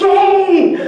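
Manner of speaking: high, loud, joyful yell. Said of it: "he yells".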